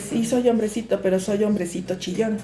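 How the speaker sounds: plain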